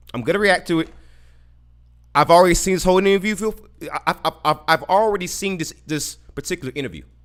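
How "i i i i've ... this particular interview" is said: stammering, repeated false starts on the word I. Reacting for the fans to an uncomfortable interview, stuttering. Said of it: "the reason why I'm stuttering".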